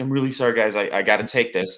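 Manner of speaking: normal talking voice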